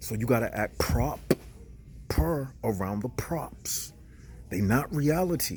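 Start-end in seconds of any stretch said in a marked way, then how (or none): 0.8-2.5 heavy stress on prop in proper. Explaining how to act around props while recording: stress on syllable prop. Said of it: "I'm putting emphasis on the prop? That's why I'm making that P sound".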